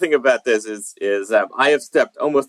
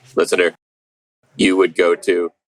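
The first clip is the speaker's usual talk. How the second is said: robotic voice, lower pitch; 5 semitones lower than usual. Podcast host, having told co-host Ken the plan, addresses the listener: robot voice. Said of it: "I'll do this in a robot voice".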